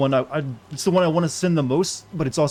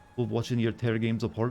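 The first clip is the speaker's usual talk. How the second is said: soft, put-on Scottish accent; 3 semitones lower, 7 dB quieter than usual. Talking to viewers during a video, saying a line in a Scottish accent. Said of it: "I said that in a, you know, Scottish accent".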